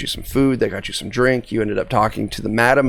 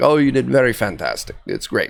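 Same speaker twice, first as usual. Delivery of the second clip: heavy, thick, swooping put-on Russian accent. Retelling a woman's reply to a friend's question, in a thick put-on accent. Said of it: "she replies back in this thick accent".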